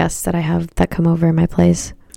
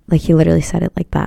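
ordinary talk

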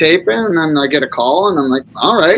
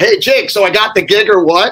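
mock-yelled call; 3 semitones higher than usual. Retelling calling out after an audition while everybody kept partying, retelling a yell. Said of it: "And I just yelled".

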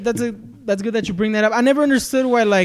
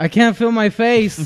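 put-on dazed, knocked-out voice. Answering a mock post-fight interview: playing a dazed knocked-out fighter. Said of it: "got into a U F C fight".

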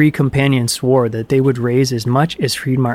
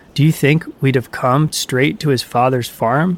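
ordinary delivery

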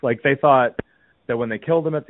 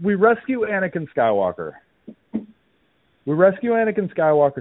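out of breath, panting, pitched up; 8 semitones higher than usual. Speaker, just back from walking up stairs, keeps talking while winded from climbing stairs. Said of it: "I'm winded from walking up the stairs".

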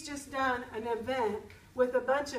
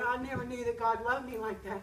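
put-on weeping, tearful voice. Speaker retells a woman's words at the speaker's event, imitating her weeping. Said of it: "And she's just weeping".

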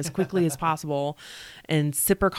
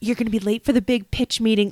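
put-on small, meek, timid, high-pitched voice; 6 semitones higher than usual. Quoting what she said, acting it out in a mock-meek voice. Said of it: "She's all meek".

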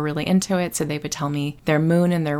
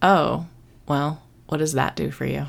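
mock-skeptical, mock-judgmental professor tone. Retelling a professor's reaction to a birthday astrology reading, mimicking a professor's skeptical tone. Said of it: "With that actual tone of voice, like, that's weird".

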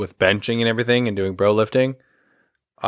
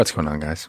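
low, subtle, low-energy, subdued delivery. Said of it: "Nice and subtle, as always".

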